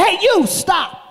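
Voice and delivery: very high-pitched, loud shouting. Retelling a man shouting while running after someone, retelling a shout to stop. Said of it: "this guy said".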